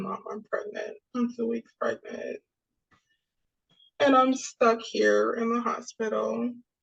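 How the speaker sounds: play-acted speaking through tears, crying. Retelling telling her mother she was pregnant: retelling own tearful words. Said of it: "I was crying too".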